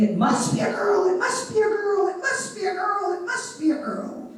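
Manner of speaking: put-on, very high, rising scream. Speaker recalls their own birth, retelling mother's screaming.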